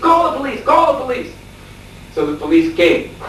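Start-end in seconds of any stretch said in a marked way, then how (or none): 0.0-1.3 high shout, repeated again and again. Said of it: "kept shouting".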